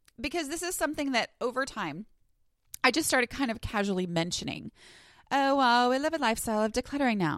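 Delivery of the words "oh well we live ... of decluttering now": put-on valley girl way of talking. Quoting something she casually tells people, in a valley girl voice. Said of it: "Why in my head do I talk like a valley girl?".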